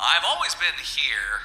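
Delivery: confused-sounding voice. Playing the announcer, answering how they got here: puzzled. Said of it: "Why do you sound puzzled about it?".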